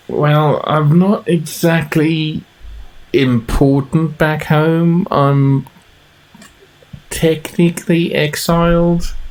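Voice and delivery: very slow, dropped-voice, hushed half-whisper. Voicing a character who drops her voice to admit something: half-whispering. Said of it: "she drops her voice to a whisper".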